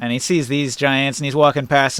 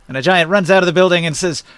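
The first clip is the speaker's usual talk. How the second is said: plain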